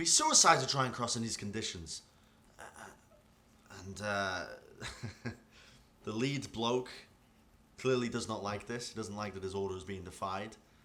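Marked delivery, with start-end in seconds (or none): 0.0-2.0 high, louder, hesitant, worried pleading. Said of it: "They're like".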